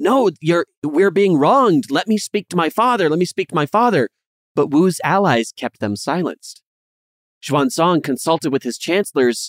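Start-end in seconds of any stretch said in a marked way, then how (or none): 0.0-4.1 mock high-pitched shouting, crying out. Narrating three princes being disarmed and protesting: mock shouting princes. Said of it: "they're shouting like".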